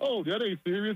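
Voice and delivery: mock amused, laughing brush-off. Imitating the press secretary dismissing the clip: imitating someone laughing dismissively. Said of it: "she was just laughing like".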